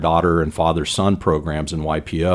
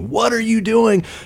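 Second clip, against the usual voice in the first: high-pitched, scolding, yelling grandma voice. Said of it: "she starts yelling at me".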